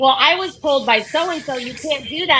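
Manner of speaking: usual speaking voice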